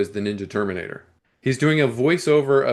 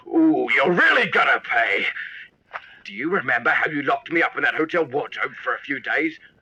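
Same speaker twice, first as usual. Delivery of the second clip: wild, exaggerated put-on Australian accent. Recapping a film, quoting a character's one-scene lines; wild Australian accent. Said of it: "now has a wild Australian accent".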